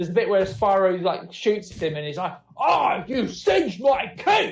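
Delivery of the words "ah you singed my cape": put-on angry teenager voice. Retelling Ripto getting shot at by Spyro: Ripto voice like an angry teenager. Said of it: "like a really just kind of angry teenager".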